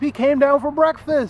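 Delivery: high, incredulous tone. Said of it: "It's not even like he went back to sleep".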